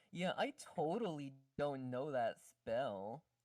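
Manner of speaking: slow, sarcastic, fake, in-character tone. Speaking in character to the party, denying knowing a spell: sarcastic in character. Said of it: "I'm in character. I'm gonna be like".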